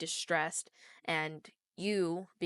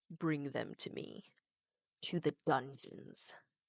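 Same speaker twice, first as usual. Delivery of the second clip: low, deep voice; 4 semitones lower, 4 dB quieter than usual. Narrating to the players, the speaker voices a deep voice heard in their heads. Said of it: "you hear a deep voice in your head".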